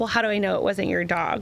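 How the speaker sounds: ordinary delivery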